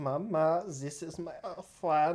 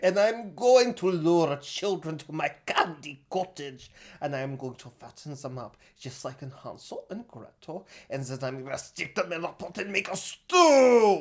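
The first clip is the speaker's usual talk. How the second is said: put-on German accent, louder; 8 dB louder than usual. Voicing Armin's wish for a candy cottage: German accent as Armin. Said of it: "Thank God we got that German expert over here".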